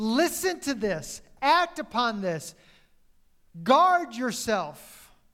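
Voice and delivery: loud, slow, stern, emphatic delivery. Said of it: "Take care is a warning".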